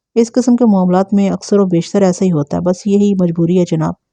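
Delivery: ordinary delivery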